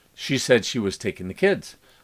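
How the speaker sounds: ordinary delivery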